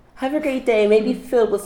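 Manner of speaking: put-on customer service voice. Speaker acts out taking a coffee order, in a customer service voice. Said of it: "my customer service voice".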